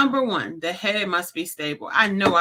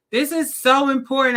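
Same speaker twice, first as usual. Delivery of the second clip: loud, high-pitched, emphatic yelling; 8 semitones higher, 5 dB louder than usual. Speaker on episode eighty-eight stressing an important point, yelling. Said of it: "I'm yelling because it's important".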